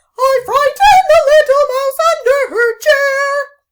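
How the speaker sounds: very high, loud, silly cat voice. Playing Pussycat in the rhyme, answering the question in a silly Pussycat voice. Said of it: "Pussycat will have a silly voice".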